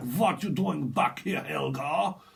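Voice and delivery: put-on fake Russian accent. A speaker channeling someone they are picking up; mock russian accent. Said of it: "it's like you're Russian style".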